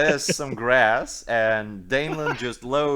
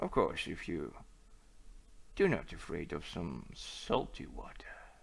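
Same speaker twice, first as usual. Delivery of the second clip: hushed, whispered, confidential tone; 7 semitones lower, 15 dB quieter than usual. Acting out a guy who gets closer to make an offer, voice lowered a little. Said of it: "he lowers his voice a little bit, gets closer".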